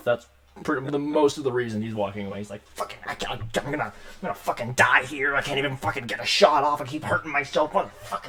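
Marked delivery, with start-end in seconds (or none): 2.7-8.3 badly hurt, frustrated, furious swearing, rising in pitch. A badly injured bandit in the game walks away: badly hurt, angry and cursing. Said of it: "actually rips a part of his nose off as it flings forward. / He's he's he's sick of it. He's hurt. He's like he's really badly hurt. He's like holding himself together pretty well because he's just so".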